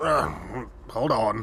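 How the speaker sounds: gruff dwarf voice, called out. Voicing a dwarf answering a call from the back: gruff Jareth voice. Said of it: "a gruff voice from the back".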